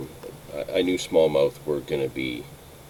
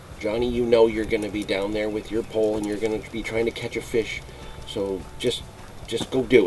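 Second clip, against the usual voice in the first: knowing, sarcastic, pitched-up voice; 7 semitones higher than usual. Speaker recalling his aunt's remark about his fishing: mimicking her sarcastic voice. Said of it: "in a sarcastic voice".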